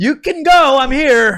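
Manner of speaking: calling out, high and loud.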